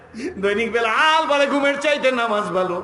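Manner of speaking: loud, high-pitched call.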